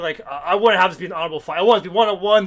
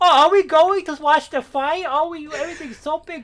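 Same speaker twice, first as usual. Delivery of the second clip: put-on high, cooing little baby voice; 9 semitones higher than usual. Describing how a character talks: Nell's baby voice. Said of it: "Nell talks like the most cliche little baby voice. Like".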